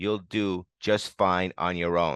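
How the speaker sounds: plain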